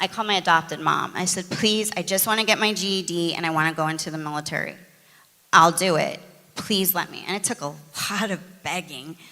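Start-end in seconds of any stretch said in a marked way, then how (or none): none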